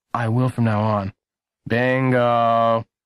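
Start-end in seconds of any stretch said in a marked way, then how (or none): 1.6-2.8 tired, worn-out, weary voice. After a mishap, a man speaks someone's name, tiredly. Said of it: "Mr. Markham said tiredly".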